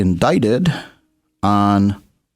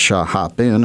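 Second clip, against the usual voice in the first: ordinary talk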